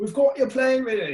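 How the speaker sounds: very high, loud, fake, bad British accent. Retelling a film scene where a British guy meets a man at the airport, bad British accent. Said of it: "bad British accent".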